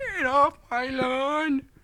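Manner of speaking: put-on squeaky, very high, very drawn-out old man voice. Acting out what the old man said to her, in a high-pitched old man impression. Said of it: "that's my old man impression with a high pitch thing".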